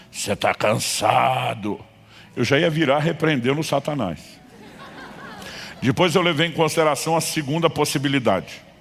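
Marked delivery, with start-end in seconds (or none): 0.2-1.8 hoarse, raspy, hollow, cavernous voice. Speaker retelling a voice behind him in the dark, in a raspy cavernous voice. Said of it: "uma voz rouca e cavernosa".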